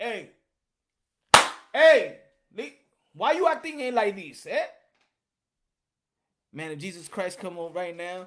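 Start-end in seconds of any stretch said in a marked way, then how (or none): 0.0-4.7 very loud, booming, raised confronting voice at full force. Imagining Jesus Christ confronting a weak man: Jesus Christ voice. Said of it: "Jesus Christ will walk up to you and be like".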